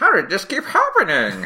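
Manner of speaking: very high, swooping villain voice with wild pitch swings. Acting out the villain's reaction after the turtles get in again: Krang voice. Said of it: "That's not a bad Krang".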